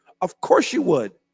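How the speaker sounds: loud, excited, fired-up, carried-away yell. The speaker addresses the audience, getting excited: yelling. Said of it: "I'm sorry I yelled".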